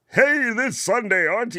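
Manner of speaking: radio DJ voice, pitched very high. Speaker shows his community how radio people talk, in a radio announcer voice. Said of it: "the radio people that do the radio voice".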